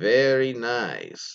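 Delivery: rolled R in very, nice stretched and drawn out. Reading a listener's note about what her boyfriend says, doing his Borat impression. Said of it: "in his best Borat impression".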